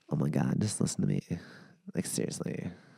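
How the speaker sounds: soft, whispery, breathy, creaky vocal-fry voice. Describing a comedian's vocal fry impression and doing it, in vocal fry. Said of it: "impression with vocal fry".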